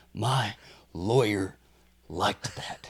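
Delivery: weird, very slow delivery with each word drawn out. Saying a movie line the way the actress says it: imitating Parker Posey's delivery. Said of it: "You gotta say it like her".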